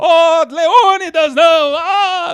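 movie-style scream, high, loud and slow.

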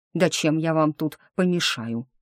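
plain

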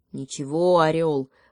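ordinary talk

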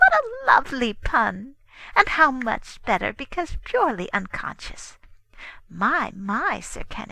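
openly delighted, high, sing-song, savoring each phrase. The Queen replies to Sir Kenneth, obviously delighted. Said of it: "obviously delighted".

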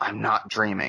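quiet, soft, hushed. Recalling what they said after catching it midair before a shift, said quietly. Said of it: "and said quietly".

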